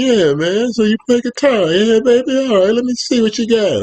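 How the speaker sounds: put-on very high, squeaky, casual old man voice. Retelling meeting an old dude at the hotel who asks about guitar, imitating Grant, typical old dude. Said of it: "He's this old dude, typical old dude. Hey, man, that's how he talks".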